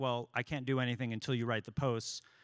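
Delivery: ordinary talk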